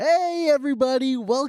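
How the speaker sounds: eager, enthusiastic, excited tone. Opening the podcast and welcoming everybody, excited greeting. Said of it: "Can we tone down the excitement".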